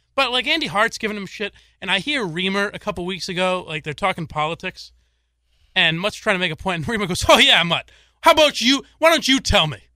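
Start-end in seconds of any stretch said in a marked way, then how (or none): 7.3-9.8 condescending, patronizing, raised needling tone. Retelling how one guy talked down to another arguing politics, mock-condescending. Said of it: "kind of condescendingly talking to him".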